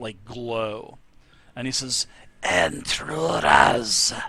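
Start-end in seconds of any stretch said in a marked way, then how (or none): 2.4-4.1 loud, hoarse, really raspy lisping voice. Narrator voicing a figure rising from his throne, really raspy lisping voice. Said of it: "it's really, really raspy and lispy".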